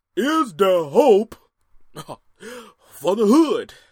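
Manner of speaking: very loud, high preacher cadence.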